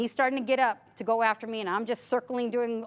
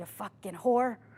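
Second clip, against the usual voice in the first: put-on mutter under the breath; 2 semitones lower than usual. Retelling what a student said as she stepped out: imitating someone muttering under his breath. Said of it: "he said that under his breath".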